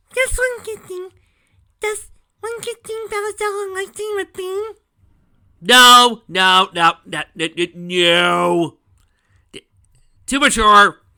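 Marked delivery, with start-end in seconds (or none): 0.2-4.8 put-on childlike voice, higher and louder. Reading a sentence aloud to mock how silly it sounds: put-on Dinky voice. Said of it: "I will once again say this in my dinky voice".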